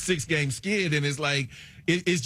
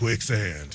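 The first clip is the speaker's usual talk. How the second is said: flat, low, deadpan delivery. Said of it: "That's my Keanu Reeves impression".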